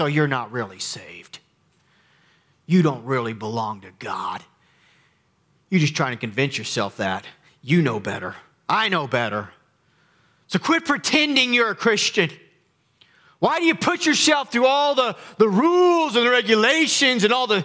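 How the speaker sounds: put-on forceful voice, swooping and rising pitch. Describing a voice that whispers to believers, the speaker acts out a forceful voice. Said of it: "you've heard this forceful voice".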